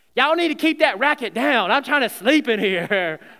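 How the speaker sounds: put-on sleepy-sounding old woman's Southern US accent. Retelling how the speaker's sleeping grandma kicked the noisy players out: southern grandma voice. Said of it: "in her southern voice".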